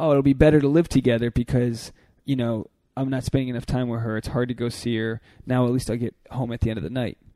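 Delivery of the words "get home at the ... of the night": ordinary talk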